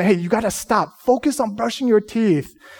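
put-on stern, strict-sounding voice. A parent retells how they spoke to their son, retelling a stern warning. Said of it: "We sternly told him".

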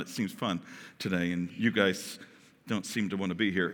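teasing, very low and soft, playful. Addressing the group, the speaker is teasing them. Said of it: "I'm teasing you".

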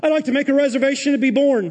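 strong, dripping, mock sarcastic tone. Acting out asking to reserve one's own birth: mock request, strong sarcasm. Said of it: "The spiritual gift of sarcasm is coming out strong".

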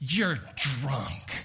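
scornful, severely condemning, damning tone. Act out Lady Astor speaking to Churchill in the elevator, imitating a most condemning voice. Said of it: "in the most condemning voice that she could muster".

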